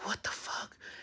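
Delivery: soft stunned whisper. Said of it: "I'm like".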